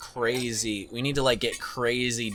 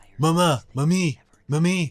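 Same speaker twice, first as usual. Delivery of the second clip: put-on cartoon accent, higher and louder; 6 semitones higher, 7 dB louder than usual. Trying out a newly found Stewie accent. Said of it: "trying to do a Stewie from Family Guy accent".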